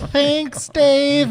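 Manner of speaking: very high, resigned voice. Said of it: "I'm just like".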